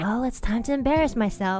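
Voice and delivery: put-on soft, mumbled delivery. Retelling what was mumbled before a performance: imitating Pomu speaking softly. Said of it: "said very st-, softly".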